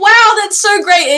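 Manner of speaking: put-on high, gushing, excited child voice. Imagining a child raised to become a dragon rider, imitating an excited kid. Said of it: "imagine this kid being like".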